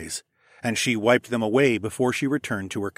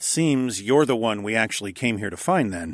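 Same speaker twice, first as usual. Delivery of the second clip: usual speaking voice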